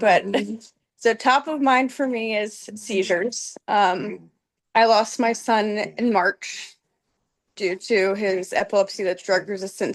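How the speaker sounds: steadying a voice close to crying. Asking about seizure research after losing a son, holding back tears. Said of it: "I'm gonna try to say this without crying".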